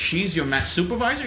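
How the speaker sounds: ordinary talk, nothing marked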